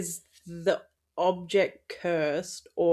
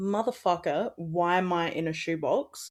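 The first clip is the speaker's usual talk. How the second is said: ordinary delivery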